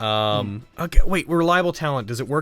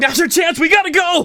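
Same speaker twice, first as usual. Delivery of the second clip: high-pitched, panicked yelling; 7 dB louder than usual. Voicing fleeing carriage passengers: yelling in panic. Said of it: "rushing and yelling, like".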